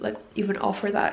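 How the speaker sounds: plain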